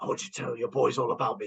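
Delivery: menacing, frightening character voice. Showing how a hero frightens villains: Batman voice. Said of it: "Batman frightens the shit out of them in the way he does".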